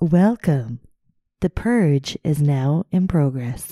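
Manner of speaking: robotic, automated telephone announcer voice. Showing the other speaker how to do a robot telephone voice. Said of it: "You do your best robot telephone voice".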